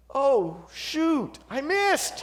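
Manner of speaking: play-acted thundering voice. Telling a joke, the speaker voices the voice from the heavens, booming. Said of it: "a booming voice from the heavens".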